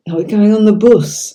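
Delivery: put-on high voice with light Yorkshire accent. A former nanny recalls the children asking a question, in a slight yorkshire accent. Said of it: "I had a Yorkshire accent".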